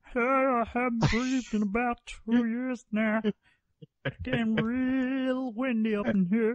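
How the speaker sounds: put-on weird voice with no breathing. Joining a friend's bit about someone who doesn't breathe: weird voice of a non-breather. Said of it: "I thought you were just doing like a weird voice".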